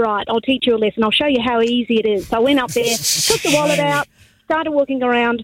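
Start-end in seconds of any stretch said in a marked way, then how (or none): none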